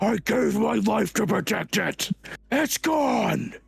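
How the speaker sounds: enraged, hurt bellow, rough and high. Narrating to a player who walks away, voice Cedric: bellow of rage and hurt. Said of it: "you hear a bellow of rage and hurt".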